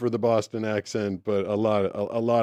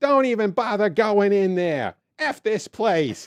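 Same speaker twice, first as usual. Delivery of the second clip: put-on old lady voice, Boston accent, calling out, higher; 10 semitones higher than usual. Retelling an old lady calling to a friend across a parking lot: imitating an old boston lady calling out. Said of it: "this old lady spots one of her friends".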